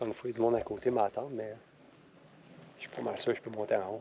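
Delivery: hushed whisper. Talking to viewers with people standing nearby: whispering. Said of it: "Je sais pas pourquoi je chuchote".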